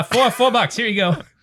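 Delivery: put-on New York Queens accent. Acting out the bartender again handing over a drink: Queens accent. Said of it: "That's Br-, Queens".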